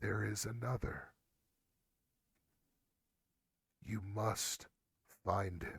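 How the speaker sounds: faint, soft, hushed half-whisper. Voicing a mysterious voice that reaches out to the player: half-whispering voice. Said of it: "you hear a voice reach out and whisper to you".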